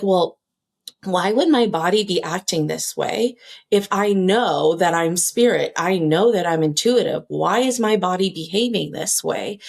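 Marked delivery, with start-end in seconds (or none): none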